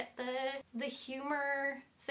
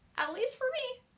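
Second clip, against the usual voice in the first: high-pitched voice leaping up an octave. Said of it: "why my, uh, voice went to a, a higher octave".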